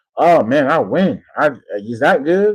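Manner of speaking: slight put-on Southern drawl, slow and mocking. Mocking a coach talking to the media: mocking southern accent. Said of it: "a little Southern accent".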